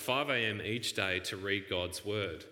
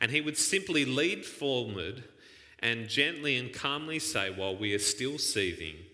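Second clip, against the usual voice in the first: ordinary talk, nothing marked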